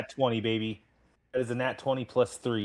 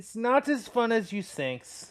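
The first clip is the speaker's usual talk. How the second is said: put-on German accent, voice very high; 12 semitones higher than usual. A player, told his character now has a German accent, tries a German accent. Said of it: "in the future, you have a German accent".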